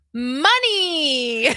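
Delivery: put-on loud, high, drawn-out exclaimed "money". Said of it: "You were like".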